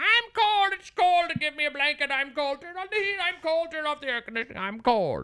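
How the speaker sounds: very high-pitched, complaining voice. Man retelling people in a trailer complaining of cold, imitating his wife's voice. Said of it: "that's my wife's voice".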